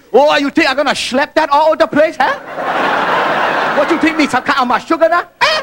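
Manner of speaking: Chinese-Yiddish accent, played for laughs. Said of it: "I want to do the accent".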